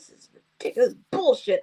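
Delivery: mock grumpy, mean tone. Retelling a father's complaint in the van: imitating someone being mean. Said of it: "Why are you being so mean?".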